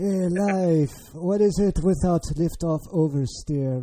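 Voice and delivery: bad, cheesy put-on French accent, slow, drawn out. Mimicking a laissez-faire attitude toward life: terrible French accent. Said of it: "That's a terrible French accent".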